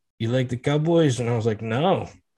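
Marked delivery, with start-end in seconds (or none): 0.2-1.2 imitated Spanish accent. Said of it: "so I get to do the accent".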